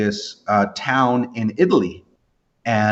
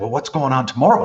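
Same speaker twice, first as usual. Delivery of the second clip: eager, curious, fast, excited delivery. Retelling own question to a bass player: imitating own excited curiosity. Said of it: "I was all excited looking at him".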